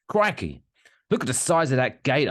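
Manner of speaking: high put-on Australian accent. After a joke about Steve Irwin, a Steve Irwin Australian accent. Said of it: "I'm doing the Australian accent now".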